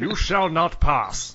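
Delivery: slow, high wizard voice. Contrasting with the other Magneto actor, doing Ian McKellen as Gandalf. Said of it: "Instead of Sir Ian McKellen down here like this".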